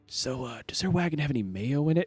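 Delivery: very quiet whisper. Voicing a character during a group story scene; whispering. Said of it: "And then and it whispers".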